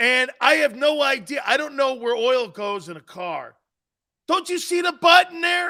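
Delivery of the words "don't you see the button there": loud, high-pitched screaming. Retelling setting up new gear, imitating a helper screaming. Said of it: "He's screaming at me".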